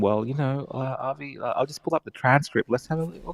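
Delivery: soft, halting murmur full of uhs. Imitating the guest pulling up the transcript: imitating Chris talking softly. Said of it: "you do a very good job of talking like this".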